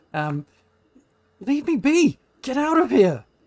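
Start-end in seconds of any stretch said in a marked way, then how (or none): 1.4-3.2 very high, very loud, shrieking furious woman's voice. A being popping out of the water speaks to the party: attempted angry female voice. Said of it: "I can't do an angry female voice, but imagine it".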